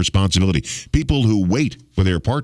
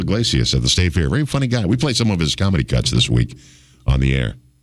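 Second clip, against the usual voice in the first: ordinary delivery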